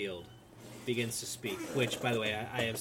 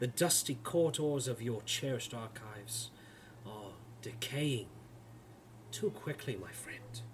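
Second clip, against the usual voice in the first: smooth, velvety, charismatic voice. Game master voicing a lord addressing the players' characters, in a velvet half-whisper. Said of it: "[name], as you see this not tall, not short, perfectly average build, height, yet seemingly charismatic lord of a man, he approaches you as he begins pacing around the room. ... His voice, a velvet whisper, continues to coat the very room".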